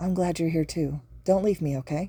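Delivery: ordinary delivery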